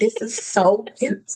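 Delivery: mock overcome, gushing with feeling. Retelling own reaction at an engagement dinner: imitating own emotional gushing. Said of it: "I was emotional".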